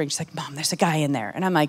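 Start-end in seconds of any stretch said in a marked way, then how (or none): 0.3-1.3 soft, hushed half-whispered stage whisper. Retelling how a daughter came out of a restroom stall: imitating a half-whisper. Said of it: "kinda whispering".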